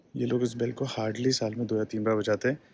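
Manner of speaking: soft hushed voice.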